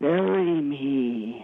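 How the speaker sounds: really scary, slow, drawn-out voice.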